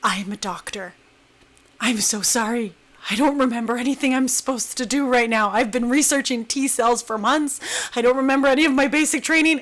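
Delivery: whispered words. Retelling what a doctor whispered to the injured speaker, retelling a whisper. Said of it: "and he whispers".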